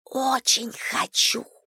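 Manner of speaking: hushed, soft whisper under the breath, barely voiced. Asked by her sister, a woman answers, whispering. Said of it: "сказала Татьяна шепотом".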